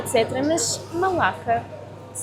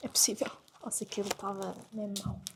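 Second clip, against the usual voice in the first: much softer, quiet, hushed talk. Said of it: "estou a falar mais baixinho".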